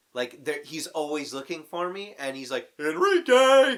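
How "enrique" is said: very high, very loud, shrill yell. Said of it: "constantly yelling Enrique".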